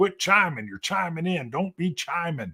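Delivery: acted angry telling-off, pitched high. Retelling going off at a senior sergeant: retelling own angry outburst. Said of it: "I went off saying".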